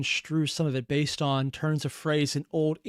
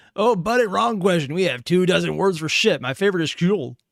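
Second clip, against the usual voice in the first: loud put-on American southern trucker accent; 2 semitones higher, 7 dB louder than usual. Voicing the Vikings' reply to a question; southern trucker accent. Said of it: "I don't know why I made them sound like a southern trucker".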